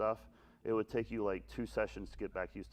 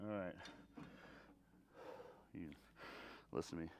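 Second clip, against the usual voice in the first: out of breath, much quieter; 3 semitones lower, 17 dB quieter than usual. After a recliner workout, the streamer addresses viewers, out of breath. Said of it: "Catch my breath here".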